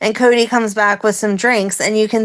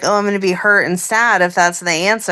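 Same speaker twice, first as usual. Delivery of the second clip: normal talking voice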